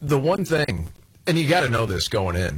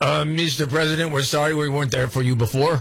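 deliberately bad, fake put-on French accent; 4 semitones higher than usual. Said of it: "I'm doing a terrible accent".

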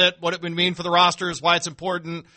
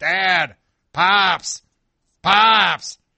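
loud calling-out voice; 5 dB louder than usual. Retelling how someone came running back calling out: imitating Nick calling out. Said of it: "Nick would come running back".

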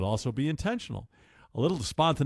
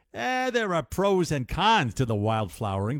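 put-on New York accent; 3 semitones higher than usual. Quoting relationship experts on a dating trend: New York accent. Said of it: "They don't say it with a New York accent, but I do".

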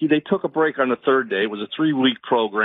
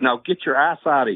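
put-on New York accent. Speaker tells a story about a police officer's reply, in a put-on New York accent. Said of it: "And in New York's accent".

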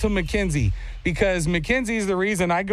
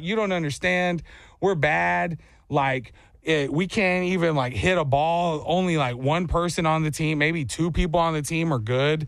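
usual speaking voice

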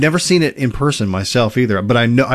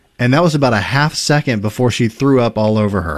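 usual speaking voice

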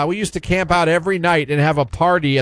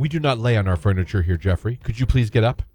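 put-on dead-serious scolding voice, lower pitch; 7 semitones lower than usual. Retelling a friend's mom telling a boy off: imitating Vince's mom, dead serious. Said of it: "I can still hear her voice".

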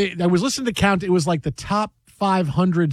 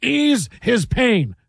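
put-on sportscaster voice, delivered slower; 4 semitones higher than usual. Speaker redoes a movie line when asked to: Marv Albert impression. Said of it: "I can do it like Marv Albert".

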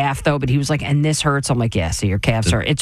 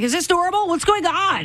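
shrill, very high-pitched yelling. Speaker acts out yelling at Jay, a former track coach, retelling a yell. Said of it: "then I start yelling at Jay".

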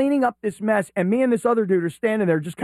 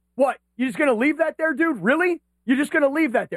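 indignant, raised voice, pitched up in disbelief; 6 semitones higher than usual. Retelling calling out a guy who left something there, re-enacting raising his voice. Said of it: "I raise my voice".

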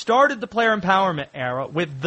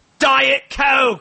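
barked delivery, higher and louder; 7 semitones higher, 6 dB louder than usual. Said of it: "he just barks out commands".

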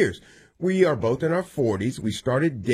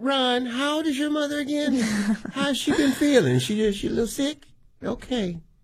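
put-on elderly woman voice, much higher; 12 semitones higher than usual. Playing a scene, the speaker asks Ron about his mother: old woman voice. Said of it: "I don't know why I'm talking like this".

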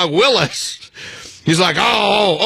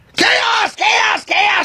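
acted-out screaming, much higher pitch; 13 semitones higher than usual. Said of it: "started screaming".

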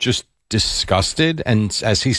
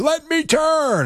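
high, drawn-out yell. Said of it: "the guy starts yelling at me".

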